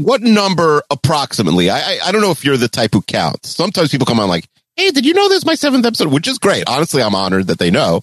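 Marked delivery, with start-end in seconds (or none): 4.8-6.1 goofy put-on voice, very high. Host imitating guests who mention their episode count, silly put-on voice. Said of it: "I don't know why I did that voice".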